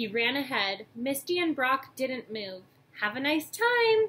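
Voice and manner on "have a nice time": nervous, anxious, very high and raised voice. Misty, staying behind with Brock, speaks to Ash as he runs ahead: nervous. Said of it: "Misty said nervously".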